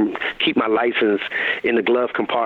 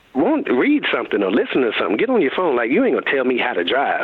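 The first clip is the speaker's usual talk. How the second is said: play-acted annoyed, fed-up agitated rant, swooping pitch. Retelling snapping at her after she kept saying to slow down, acting out agitation. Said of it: "I'm getting agitated with her".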